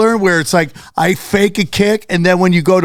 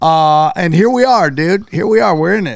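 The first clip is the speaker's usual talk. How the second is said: normal talking voice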